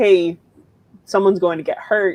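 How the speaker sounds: ordinary talk, nothing marked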